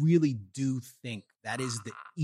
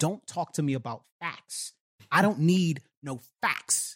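put-on scream, higher; 4 semitones higher than usual. Retelling a talk where a student stood up in the crowd: imitating a student screaming. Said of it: "he starts to yell at me and he screams".

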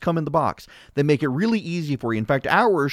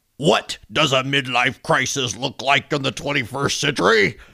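put-on irate, angry persona voice; 2 semitones lower than usual. Reading a passage aloud, switching to a put-on angry feminist voice. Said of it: "I have to do my feminist voice. Angry feminist".

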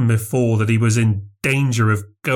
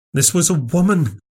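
short-tempered, impatient, pitched-up voice; 7 semitones higher than usual. Correcting the other man during a wrangle in the dark, impatient. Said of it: "Craven said impatiently".

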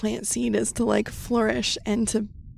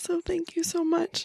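tearful, crying, high-pitched voice; 8 semitones higher, 3 dB quieter than usual. Moved by a card's message, thanking someone while crying. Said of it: "I'm crying because that felt so true".

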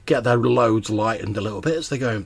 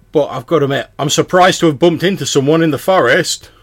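raised voice, very loud; 4 semitones higher, 9 dB louder than usual. A traveller greeting a stranger met in the forest, voice raised. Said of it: "Why are you raising your voice?".

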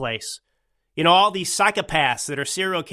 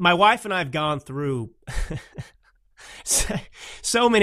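words broken up by laughing, talking through laughter. Telling about watching TV shows with a spouse, laughing while talking. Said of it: "I don't know why I'm laughing".

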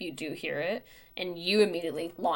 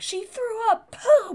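put-on breathless hyperventilating panic, very high, loud; 7 dB louder than usual. Retelling what someone shouted in a panic: imitating panicked hyperventilating.

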